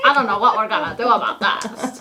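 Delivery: silly, ridiculous put-on boyish voice. Retelling a movie scene, imitating a girl's ridiculous boy voice. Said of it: "walking around talking like this".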